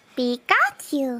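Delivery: adorable, put-on cute cartoon creature voice. Asked to do a voice for any character, a speaker does a cute impression. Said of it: "That's probably my best impression".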